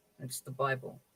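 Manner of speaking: hushed, very quiet, low, low-key voice. A man answering the doctor's question about his book, in a very quiet voice. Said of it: "says in a very quiet voice".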